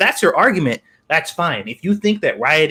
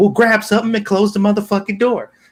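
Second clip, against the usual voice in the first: acted-out high-pitched hollering voice; 6 semitones higher than usual. Retelling a skit where a mother scolds her son: imitating a mother yelling. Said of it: "yelling at him for everything".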